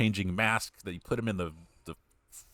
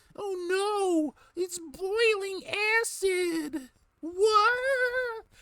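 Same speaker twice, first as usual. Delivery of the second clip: very high, slow cartoon voice, "oh" stretched out; 4 dB louder than usual. Imitating a movie guard's line: Scooby-Doo character voice. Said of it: "he sounds like a Scooby-Doo character".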